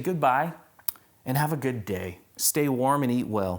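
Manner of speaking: ordinary talk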